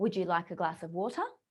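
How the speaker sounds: question-like rising tune climbing on water. Teaching question tonality with an example offer, rising pitch at the end. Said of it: "our tonality goes up at the end of our sentence to indicate that we're asking a question".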